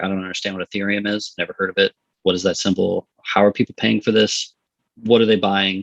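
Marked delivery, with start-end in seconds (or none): none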